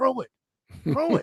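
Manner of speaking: very high, hushed mutter under the breath. Retelling a radio broadcast moment: imitating Jason Campbell muttering under his breath. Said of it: "under his breath, you could hear Jason say".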